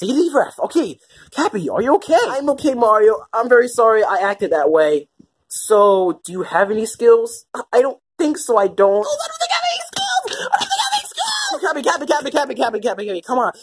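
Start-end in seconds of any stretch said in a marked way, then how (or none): 9.0-11.6 very high, rushed, soft panicked babble. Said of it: "calm down, calm down".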